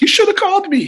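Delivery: very high, loud voice. Retell what Mike said about the online show, in a high put-on Mike voice. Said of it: "it was a bit high".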